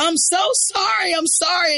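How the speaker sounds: very high, stretched-out screaming cry. Retelling a video of a girl after her sister falls: imitating someone screaming. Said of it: "instantly starts screaming like".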